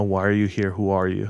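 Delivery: ordinary delivery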